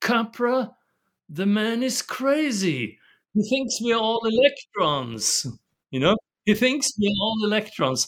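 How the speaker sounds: put-on British accent with crazily stretched words. Retelling what Bateson said about the speaker at a seminar: imitating Bateson's British accent. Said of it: "Bateson said with his British ap-, accent".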